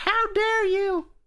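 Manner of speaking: very high, angry, scolding mother voice. Pretending to be a mom scolding someone: mock angry mom voice. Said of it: "She's gonna be mad".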